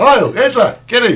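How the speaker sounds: high-pitched, loud, carrying shout hollered out. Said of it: "she used to call him by shouting".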